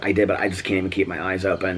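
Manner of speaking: plain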